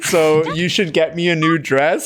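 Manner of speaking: plain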